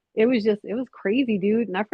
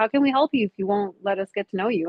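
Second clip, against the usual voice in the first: ordinary talk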